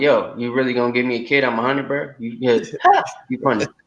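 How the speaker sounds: put-on talking through laughter, loose and laughing. Acting out Abraham's reply while reading the verse aloud: imitating Abraham laughing. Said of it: "now he's laughing like".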